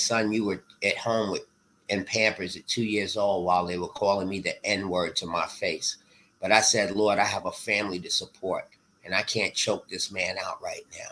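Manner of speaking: normal talking voice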